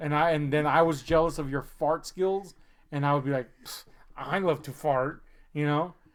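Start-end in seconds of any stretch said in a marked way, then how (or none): 3.7-5.2 mock snotty, bratty, too-cool cool-girl tone. Acting out jealous imitation of a cool line: bratty cool voice. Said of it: "imitating her in, like, that kind of, like, bratty way".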